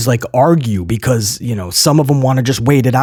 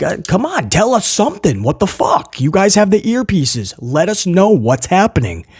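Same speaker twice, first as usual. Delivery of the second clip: put-on frustrated, exasperated voice, high and loud; 5 semitones higher than usual. Retelling yelling at security about a late appearance: retelling yelling at security. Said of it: "I'm yelling at the security, like".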